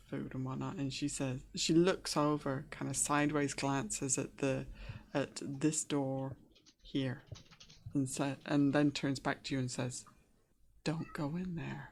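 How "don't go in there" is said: hushed, very quiet, under the breath. Voicing a woman who glances at a door and warns you: very quiet, under her breath. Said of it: "and very quietly, kind of under her breath".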